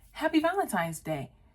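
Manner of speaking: put-on nice, genuine, friendly tone. Retelling a movie scene, quoting the reporter's greeting: imitating someone nice and genuine. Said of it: "It's all nice, open, genuine".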